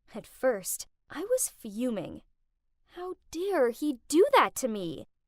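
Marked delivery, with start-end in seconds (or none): none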